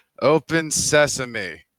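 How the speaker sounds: heavy, dripping sarcasm. Trying to open a stuck chest with a spoken word: very sarcastic. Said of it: "I very sarcastically say".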